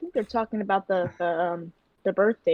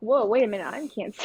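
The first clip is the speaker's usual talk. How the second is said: ordinary delivery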